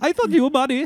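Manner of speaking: botched fake Indian accent, very high and loud. Imitating an imagined indian voice message: bad put-on indian accent. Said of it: "that doesn't sound Indian".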